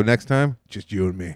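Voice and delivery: low, soft, ominous, private-sounding voice.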